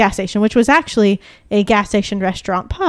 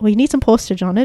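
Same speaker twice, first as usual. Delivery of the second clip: put-on thick Irish accent. Retelling what a countryside shop clerk said about postage: imitating a thick Irish accent. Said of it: "This guy had a very thick Irish accent".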